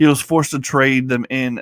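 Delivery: ordinary delivery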